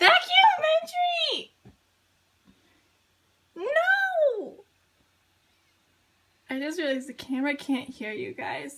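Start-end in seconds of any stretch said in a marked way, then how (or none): 0.0-4.6 shrill, very loud, all-out shout, "no" stretched. Recording proof of an early start, yelling.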